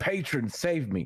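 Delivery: high, pained scream. Voicing a character in pain calling on his patron: screaming out in pain. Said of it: "he'd probably scream out in common".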